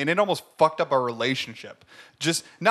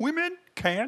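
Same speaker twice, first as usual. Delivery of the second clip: very high, froggy frog-puppet voice; 12 semitones higher, 3 dB quieter than usual. Trying to get into an impression of Jordan Peterson: Jordan Peterson impression. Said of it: "your Jordan Peterson sounds like Kermit".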